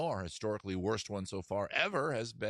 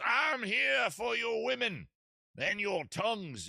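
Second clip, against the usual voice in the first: slow, high southern gentleman drawl; 13 semitones higher than usual. In a comic bit about liquors, the newcomer kicks open the door: Lord Kingsford southern gentleman voice. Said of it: "why he's a southern gentleman".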